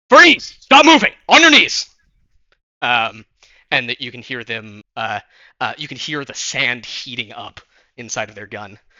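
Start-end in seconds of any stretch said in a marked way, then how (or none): 0.1-1.8 very loud, high-pitched barking shout. Game scene: one of the people shouts at a player walking toward it; shouted command. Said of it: "one of the one of the people shouts".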